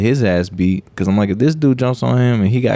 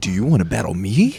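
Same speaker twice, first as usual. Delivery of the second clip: imitated anime-style character voice, taunting. Retelling a man challenging another to fight: imitating an anime character. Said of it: "he's like an anime character".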